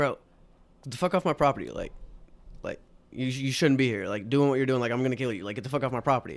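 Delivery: put-on furious, threatening voice. Retelling what an angry homeowner shouted at him: imitating an angry homeowner. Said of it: "he had the shortest fuse".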